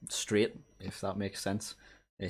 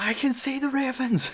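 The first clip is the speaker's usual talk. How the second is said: very high, loud, full-on screaming; 7 dB louder than usual. Showing how someone talks inside another animal, say it screaming. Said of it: "but you're just screaming".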